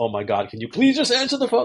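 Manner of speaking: very high, rising, mock exasperated and frustrated tone. Speaker acting out a caller whose calls go unanswered, imitating a frustrated caller. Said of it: "an expression of frustration?".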